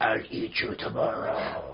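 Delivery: hushed, soft, breathy, little growly dragon voice. A father retells his daughter reading the dragon's line: growly dragon voice. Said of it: "she's always making the same voice".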